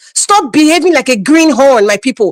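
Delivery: plain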